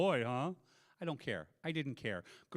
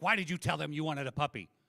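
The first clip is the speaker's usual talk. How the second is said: put-on angry voice. Retelling what his wife asked once they got home, retelling her angry question. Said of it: "She was very mad".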